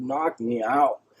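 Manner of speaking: play-acted, half-voiced, urgent, insistent pushing demand. Retelling yelling at the doctors while in pain: imitating own past yelling. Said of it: "And I'm yelling at the doctors".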